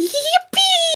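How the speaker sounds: put-on very high, slow, squealing, excited German kid voice.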